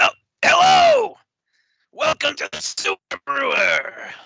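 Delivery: very high, raspy, creaky goblin voice. Voicing a goblin who greets the party as they enter: voicing a goblin. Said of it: "We got to the goblin".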